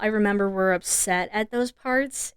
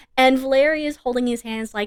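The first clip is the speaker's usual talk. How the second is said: ordinary talk, nothing marked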